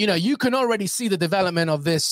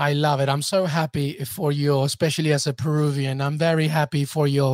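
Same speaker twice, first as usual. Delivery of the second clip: sarcastic, fake, overdone sincerity; 3 semitones lower than usual. Congratulating a guest as a peruvian, joking: mock sarcastic. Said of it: "he says sarcastically".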